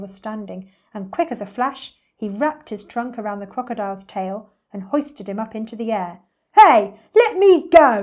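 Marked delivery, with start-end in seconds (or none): 6.6-8.0 booming, very loud, very slow, drawn-out high yell. Reading a story, the crocodile hoisted into the air by the elephant: yelled. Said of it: "Yelled the enormous crocodile".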